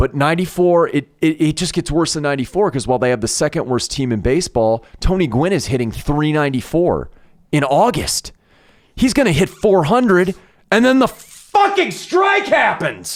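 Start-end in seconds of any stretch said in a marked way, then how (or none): 5.0-13.2 raised voice building into rising, high-pitched yell. Talking with another speaker, yelling. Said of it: "Sorry for yelling".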